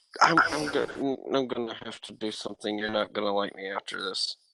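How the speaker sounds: voiced stage half-whisper, close in, in character. Voicing a character who pulls a friend aside: half-whispering in character. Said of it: "whisper to her ear".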